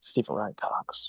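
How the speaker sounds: quiet muttering under the breath. Muttering a twisted version of the teacher's full name: muttered under the breath. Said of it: "Under my breath".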